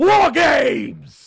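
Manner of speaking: very loud, high-pitched, rough belted cry. Imitating William Regal announcing a match: William Regal impression. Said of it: "It was actually a good impression".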